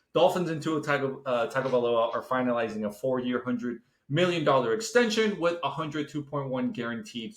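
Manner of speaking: plain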